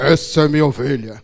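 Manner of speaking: heavy, deep, thick, low pastor's voice. Retelling what the baptizing pastor said: imitating Sebastião's deep voice. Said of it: "com aquela voz grossa que ele tinha".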